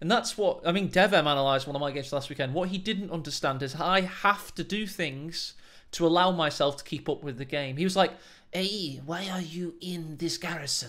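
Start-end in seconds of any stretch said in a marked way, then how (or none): 8.5-10.9 slow, put-on Portuguese accent. Quoting a man who analysed his game, in a portuguese accent. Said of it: "But in a Portuguese accent".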